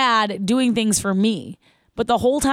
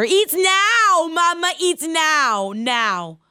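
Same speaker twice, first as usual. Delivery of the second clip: put-on very slow, rising, insistent two-year-old voice; 7 semitones higher than usual. Speaker at a restaurant retells her two-year-old demanding food, imitating a toddler getting louder. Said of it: "And it gets louder".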